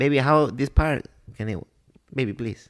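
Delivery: put-on Spanish-accented voice.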